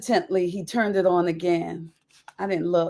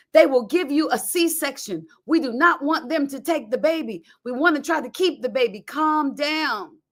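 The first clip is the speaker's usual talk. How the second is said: put-on yell, higher; 7 semitones higher than usual. Retelling the midwife on the phone: imitating the midwife yelling. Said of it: "she yelled at me on the phone".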